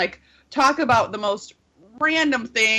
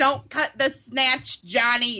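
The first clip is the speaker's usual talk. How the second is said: put-on voice of an old grandmother. Retelling another person's line while joking about being grandmothers: old granny voice. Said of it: "And like our voices sound like this".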